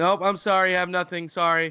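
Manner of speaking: curt, blunt, dismissive, impatient tone. Acting out a scene, brushing off someone asking for help: acting a blunt refusal. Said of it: "we'll act it out".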